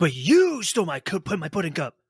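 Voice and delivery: exaggerated, cringy anime style, swooping and slow. Mocking cringy anime dialogue: over-the-top anime character voice. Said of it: "the character's just like".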